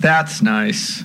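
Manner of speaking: low, flat, unenthused tone. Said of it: "You don't sound too enthused".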